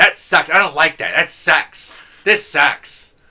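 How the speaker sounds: very loud angry griping, acted. Imitating a negative guy from class, imitating a pissed-off angry voice. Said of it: "this very pissed off sounding angry voice".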